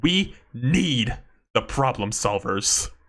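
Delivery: slow, passionate, impassioned delivery with weighty diction. Reading out a comment in the diction it deserves: read with passion. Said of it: "the diction and, like, passion it deserves".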